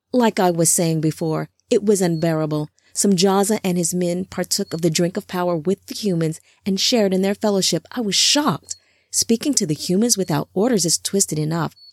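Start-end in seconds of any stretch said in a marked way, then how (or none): none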